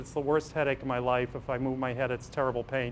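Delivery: ordinary delivery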